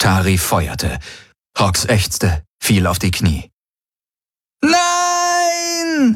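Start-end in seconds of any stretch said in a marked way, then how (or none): 4.6-6.2 very high, long, drawn-out shriek. Narrator reads Kirai's line as Tari fires on Hox: screaming. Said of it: "schrie Kirai".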